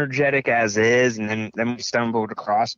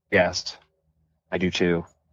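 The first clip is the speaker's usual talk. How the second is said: low, put-on serious voice; 4 semitones lower than usual. Agreeing about loving 90s Nickelodeon, in a mock serious voice. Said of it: "That was my serious voice".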